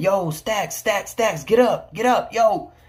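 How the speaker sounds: mock yelling. Recalling sleeping in his cell, the speaker retells others yelling to wake him. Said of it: "they were yelling for me".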